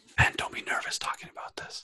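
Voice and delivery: quiet whisper under the breath, to self. Talking to himself while pulling up figures, whispering.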